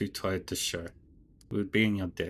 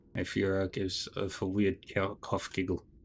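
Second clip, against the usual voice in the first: usual speaking voice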